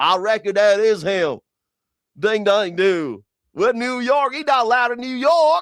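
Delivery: put-on Deep South Mississippi accent. Joking about a New York cop who's on loan from Mississippi, put-on Mississippi accent. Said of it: "Bill's on loan from Mississippi".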